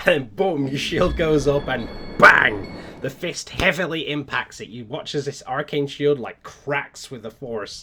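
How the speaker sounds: ordinary talk, nothing marked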